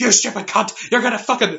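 play-acted all-out scream, high and loud. Speaker acts out yelling alone in the car at someone from childhood, retelling a scream. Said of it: "I'm just like screaming at".

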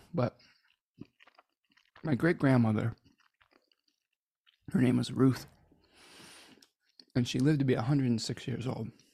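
speaking with food in mouth. Speaker eating chocolate while talking, talking with mouth full. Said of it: "I'm sorry to talk with my mouth full".

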